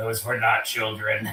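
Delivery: put-on stereosonic voice. Retelling a scene where a woman answers a man: stereosonic voice. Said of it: "she says in like this stereosonic voice".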